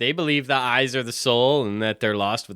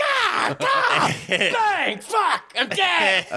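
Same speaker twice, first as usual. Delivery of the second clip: put-on shot crow sound, higher pitch. Quoting a film villain's quick impression: impression of a crow being shot. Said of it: "That's a good impression of a crow being shot".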